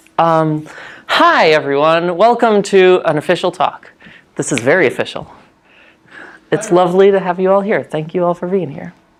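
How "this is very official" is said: sarcastic, tongue-in-cheek tone. Opening a talk to an audience, the speaker says it sarcastically.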